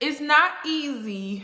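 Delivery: holding back tears, easy and drawn out. Talking about how hard daily life is, the speaker tries not to cry. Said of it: "I'm trying not to cry".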